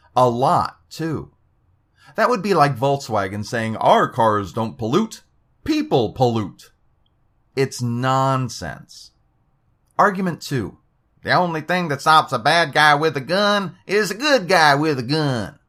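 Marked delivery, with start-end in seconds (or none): 11.3-15.5 put-on twangy accent made to sound dim. Quoting a numbered argument aloud, read in a twangy accent. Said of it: "I read that with a twang".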